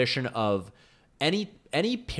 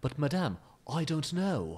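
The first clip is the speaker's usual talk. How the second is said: put-on trying an English accent; 2 semitones higher, 5 dB quieter than usual. Showing how Keanu Reeves would sound attempting an English accent. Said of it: "trying to do an English accent, he would be like".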